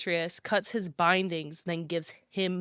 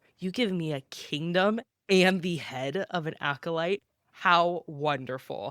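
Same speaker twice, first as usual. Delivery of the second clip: usual speaking voice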